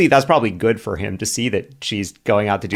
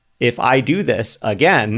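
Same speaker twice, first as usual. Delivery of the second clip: plain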